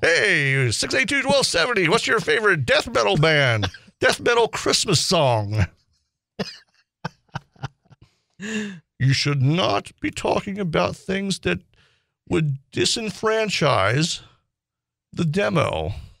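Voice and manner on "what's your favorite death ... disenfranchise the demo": put-on masked-villain voice. A host mimics the consultant's advice, in a Bane voice. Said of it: "the consultant sounds like Bane from Batman".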